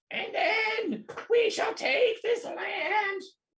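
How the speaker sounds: high-pitched shrill villain scream, "land" drawn out. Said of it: "he keeps screaming like that".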